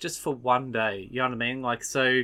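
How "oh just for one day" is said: thoroughly exasperated, fed-up tone. Discussing how he says a wish, acting it out, mock-exasperated. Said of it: "he says it in an exasperated way".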